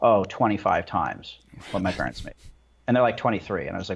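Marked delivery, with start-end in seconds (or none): 0.0-2.4 put-on deadpan delivery. Retelling people's answers about their pay versus their parents': imitating a deadpan reply. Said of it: "they would just deadpan".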